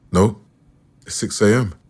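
ordinary delivery

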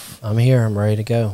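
lacking energy, unenergetic. Guest arriving on the show, answering the host with low energy. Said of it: "You sound a little without energy today".

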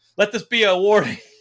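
high, loud yell.

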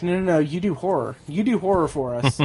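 ordinary talk, nothing marked

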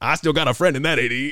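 put-on Cajun accent pitched way up, very loud. Retelling what a fired coach told his AD: Ed Orgeron Cajun accent. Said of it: "with that beautiful Cajun accent that he has".

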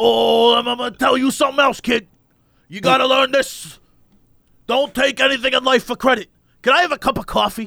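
put-on voice of a homeless man. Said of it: "I'm doing a voice that's not his voice".

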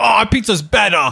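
acted riled-up, defensive anger. Mocking people who insist their pizza is better: imitating angry people. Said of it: "angry people being like".

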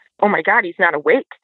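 terrified, panicked, frightened cry. Recalling trying to wake a screaming sleeper, retelling terrified panic. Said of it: "I'm terrified at this point".

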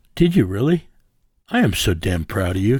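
surprised, astonished tone. Hearing that the guest read the American Constitution, the host responds: surprised. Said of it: "Don't sound so surprised".

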